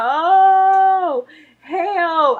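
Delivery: high pained scream, "oh" stretched long. Recounting labor while waiting to dilate and begging for a doctor, retelling a pain scream. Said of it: "It got to the point where I'm screaming".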